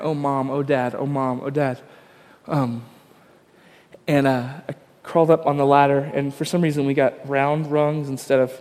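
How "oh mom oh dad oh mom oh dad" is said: put-on voice crying softly. Recounting finding Molly crying for her parents, imitating her quiet wailing. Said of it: "it was just this crying".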